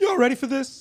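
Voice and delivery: voice cracking upward. Opening the show with a hype line: voice cracking up in pitch. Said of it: "kinda went up in the pitch".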